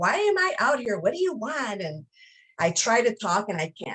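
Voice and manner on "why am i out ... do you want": put-on irritated, annoyed, pitched-up shout. A wife recounts her husband shouting at her: imitating an annoyed shout. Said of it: "he shouts like".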